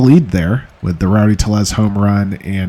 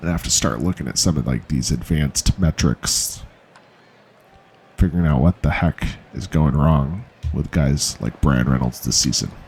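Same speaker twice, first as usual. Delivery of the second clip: disappointed, deflated, let-down tone; 6 semitones lower, 6 dB quieter than usual. Commenting on a struggling player while playing a baseball game: disappointed. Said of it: "Can you hear the disappointment in my voice?".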